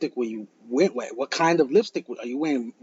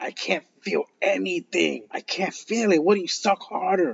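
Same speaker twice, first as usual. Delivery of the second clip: high-pitched, yelling, complaining voice; 5 semitones higher than usual. Retelling what a drunk man shouted at her: imitating someone yelling. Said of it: "he was yelling at her".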